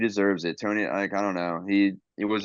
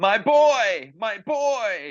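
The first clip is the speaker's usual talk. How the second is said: mock very high, very slow, loud scream, "boy" stretched; 13 semitones higher, 5 dB louder than usual. Retelling a wrestling match where one wrestler holds his partner: imitating Mason screaming. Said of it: "he starts screaming".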